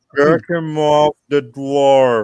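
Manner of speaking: very slow, strange, dragged-out words. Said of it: "Why are you talking like that?".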